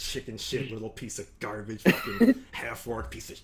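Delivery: grumbled and whispered under the breath, muttering. Voicing Bolgard as he keeps insulting through the door: muttering insults. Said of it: "now he's just muttering insults".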